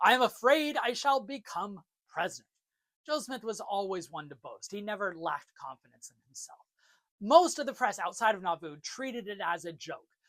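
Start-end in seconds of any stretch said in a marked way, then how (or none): 0.0-2.5 boastful, bragging put-on character voice. Quoting a boast from the newspapers: Joseph Smith impression. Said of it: "Smith impression voice".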